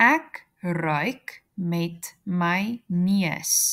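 very slow, drawn-out repetition.

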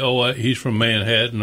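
ordinary talk

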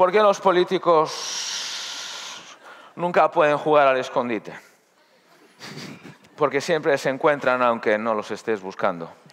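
slow, halting, drawn-out delivery with politician-like pauses.

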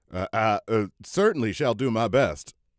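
stuttering, stumbling speech. Narrator reads the colonel's reply to a girl: stammering. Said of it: "stammered the colonel".

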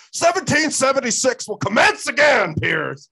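shrill, very high-pitched, loud screaming. Retelling a guest's outburst at the host in a gun control debate, imitating Alex Jones screaming. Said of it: "he just starts screaming at Piers Morgan".

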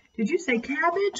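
high, eager, exclaiming cry. Narrator reading Clara, a caterpillar in her egg case, crying out. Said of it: "cried Clara".

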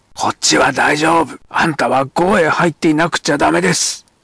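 furious, loud, angry bellowing shout. A narrator reads a man shouting to a woman at the gate, shouted. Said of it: "山木が怒鳴った。".

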